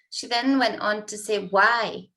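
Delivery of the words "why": mock, loud, snippy "why" loaded with attitude. Retelling a staff member's reply: imitating an attitude-filled "why". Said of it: "with quite an attitude".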